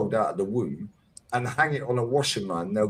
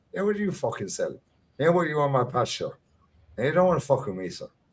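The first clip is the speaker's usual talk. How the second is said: playful, bantering, put-on Irish accent; 3 semitones higher than usual.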